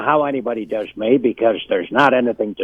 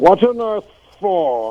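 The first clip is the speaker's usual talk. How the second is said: slow, deliberate, drawn-out, very high; 9 semitones higher than usual. Retelling what the actor said when walking away: James Mason impression. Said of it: "That's a perfect James Mason".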